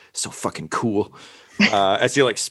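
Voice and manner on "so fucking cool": muttered under the breath in a whisper. Voicing a skull-headed character who mutters while spitting out sweat: muttering in character. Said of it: "he just mutters".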